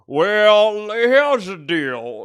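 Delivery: put-on Southern lawyer voice. Playing a bit, addressing the judge in a southern lawyer voice. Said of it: "you sound like a Southern lawyer".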